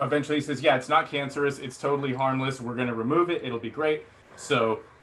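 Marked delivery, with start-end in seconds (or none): none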